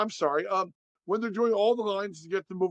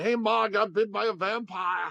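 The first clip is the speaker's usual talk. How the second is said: put-on heavy Boston accent, slower. Describing a movie, the speaker voices the oldest son's line in a thick Boston accent. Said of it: "the oldest son has a thick Boston accent".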